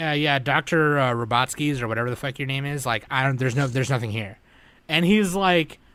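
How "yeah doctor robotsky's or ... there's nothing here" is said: plain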